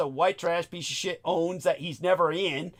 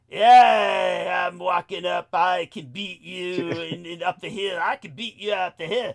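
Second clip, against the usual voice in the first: mock sleazy, smarmy man's voice, louder; 5 dB louder than usual. Retelling a stranger coming up behind: imitating a sleazy, smarmy man. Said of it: "comes up at me with this sleazy, smarmy".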